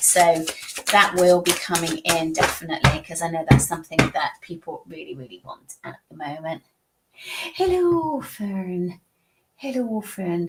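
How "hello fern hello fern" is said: put-on Irish accent, very slow and drawn right out. Greeting fern, in an irish accent. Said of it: "I don't know why I got that Irish accent on".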